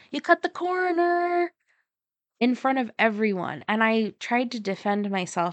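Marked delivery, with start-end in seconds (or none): 0.1-1.5 put-on yell, higher. Retelling how a p e aide yelled out in front of everyone: imitating an aide yelling. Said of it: "one of the P E aides yelled out".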